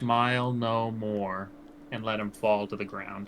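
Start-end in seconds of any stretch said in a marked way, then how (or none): 0.0-1.5 close, intimate, half-whispered murmur. Voicing a character speaking into a fallen enemy's ear: half-whispering in his ear. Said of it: "and whisper in his ear".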